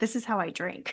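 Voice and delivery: put-on serious tone. Retelling a woman answering a man who mocked her drinking, mock-serious retort. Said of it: "she just looks at him so serious".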